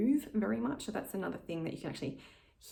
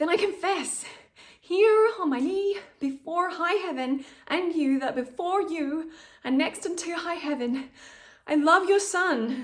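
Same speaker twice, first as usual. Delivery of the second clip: tense, ungrounded, pushed, very high and very loud; 11 semitones higher, 11 dB louder than usual. Showing a deliberately bad, not connected example: ungrounded, pushed delivery. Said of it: "my voice is like, I feel like I'm breathing up high. I feel tense".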